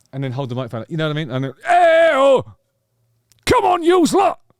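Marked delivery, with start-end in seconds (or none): 1.7-4.4 high, loud hype yell.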